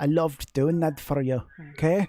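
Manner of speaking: put-on poor Scottish accent. Doing a put-on voice for another speaker: bad Scottish accent. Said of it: "I'm not very good at Scottish".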